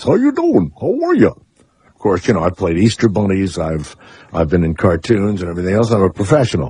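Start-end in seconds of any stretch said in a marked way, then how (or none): 0.0-1.3 very high voice, talking through an overbite. Showing Steve the overbite his turtle voice has: overbite Tommy the Turtle voice. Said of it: "I sound like I have that overbite".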